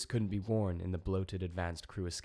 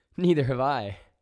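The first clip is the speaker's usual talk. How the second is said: very loud, high, nervous laughing; 6 semitones higher, 11 dB louder than usual. An ambassador answers the others over the open channel, laughing nervously. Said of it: "laughed the ambassador nervously".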